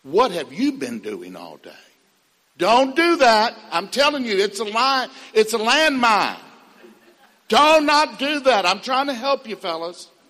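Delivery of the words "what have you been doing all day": smug, self-satisfied, very low, swooping. Giving advice to the fellas, acting out a line never to say: smug. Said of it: "say smugly".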